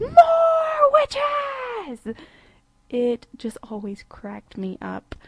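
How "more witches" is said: very high, very loud shriek, drawn out. Retelling a comedy film scene's answer: imitating Eric Idle shouting at top of lungs. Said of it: "Idle just shouts out at the top of his lungs".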